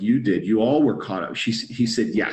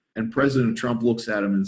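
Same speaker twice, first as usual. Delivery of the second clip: normal talking voice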